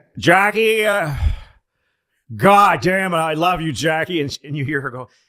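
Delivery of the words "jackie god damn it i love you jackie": put-on very loud, pitched-up, drunken bellow. Retelling a taped late-night call to Jackie, imitating drunk LBJ.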